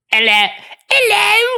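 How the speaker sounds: high, swooping, sing-song put-on Cockney accent. Showing how a female character is supposed to sound: Cockney accent. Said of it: "Yeah, like that".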